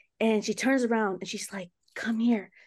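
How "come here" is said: still, low-key, secretive and eerie tone. Retelling the sister at night saying come here: imitating sister speaking very quietly. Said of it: "Very, very, like, quietly".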